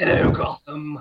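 theatrical, high, manic cartoon villain voice. Podcast guest greeting listeners as the host introduces him: Joker voice. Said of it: "I had to do my Joker voice".

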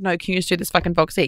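ordinary talk

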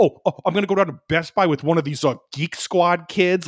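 high tone dripping with disgust. Retelling how a man said something, imitating him sounding disgusted. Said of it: "like just disgusted".

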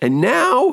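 voice suddenly snapping and breaking mid-phrase. Giving instructions about introductions when the voice suddenly breaks: voice cracking. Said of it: "My voice is cracking".

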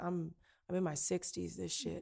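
put-on flat numb tone. Retelling a phone call with dad, imitating someone sounding numb. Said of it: "he just sounded so numb".

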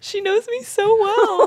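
very high, choked up, tearful, drawn out, near tears. Reacting as the other speaker guesses one's opinion of a film: tearful, about to cry. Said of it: "you are crying".

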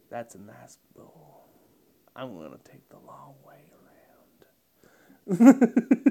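very low, deep car-commercial narrator voice. Impersonating an actor doing his car commercials: Matthew McConaughey impression. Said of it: "I'd impersonate him doing his Lincoln commercials".

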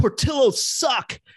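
jeering yell, high and short. Speaker recounts someone yelling at them during a game, retelling a yell. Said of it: "he yelled at me like".

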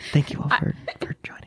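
whispering. With two mics held together like they're kissing, speaking to the Zoom call, whispering. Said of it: "And I'm gonna whisper".

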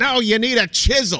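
mean, drawn-out, dismissive put-down tone. Speaker retells a man's answer to the listener's question: imitating a mean reply. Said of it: "he just was so mean to you".

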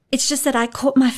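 high-pitched, rushed, babbling gabble of tumbling words. Narrator reads a woman's apology to the celebrity after the launch, gabbling. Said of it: "she gabbled before he could speak".

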